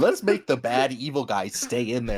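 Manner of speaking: low, evil, scheming, sinister serpent voice. Retelling what the snake said: imitating an evil-sounding snake. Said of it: "The snake sounded evil and was like".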